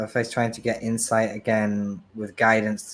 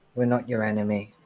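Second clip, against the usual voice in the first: hushed whispering. In a narrated scene, she speaks into his ear, whispering. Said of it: "She whispers in his ear".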